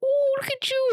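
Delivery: put-on very high baby-talk kiddie voice. Retelling meeting little Indiana again, the speaker greets her in a kiddie voice. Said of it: "I went into like kiddie voice".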